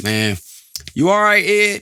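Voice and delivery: put-on wild St. Louis accent, pitched very high. Recalling a friend from Saint Louis asking if he's all right, imitating Javante's St. Louis accent. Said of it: "he got this crazy accent".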